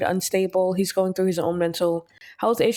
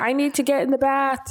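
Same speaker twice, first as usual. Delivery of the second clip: full-on high-pitched acted screaming fit; 6 semitones higher than usual. Voicing a game character who desperately wants a bath: voicing a character screaming.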